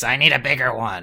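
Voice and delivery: deep demonic monster-like voice. Retelling a television moment where Tiki spoke, imitating Tiki's demonic voice. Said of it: "Tiki says in a demonic voice".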